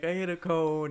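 put-on macho tone, trying to sound tough. Retelling own answer to the tow truck guy: retelling a put-on macho tone. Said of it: "trying to put on, like, my macho".

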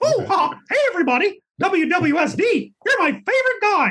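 squeaked out slowly with swooping pitch. Recalling competing to voice Mickey Mouse, the speaker does the Mickey Mouse voice. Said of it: "play the voice of Mickey Mouse".

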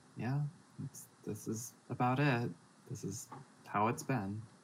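soft, half wistful, half exhausted delivery. Voicing a character looking over the city with a huge sigh: half wistful, half exhausted. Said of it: "halfway wistful, halfway exhausted".

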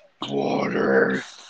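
very low, loud, creepy voice. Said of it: "make a really deep voice".

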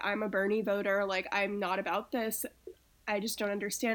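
normal talking voice

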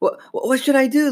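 halting, stumbling stammer, very high and slow. A girl called for help, coming hesitantly down the stairs, stammering. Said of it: "Lindsay stammered".

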